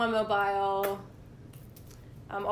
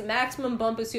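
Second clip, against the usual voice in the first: usual speaking voice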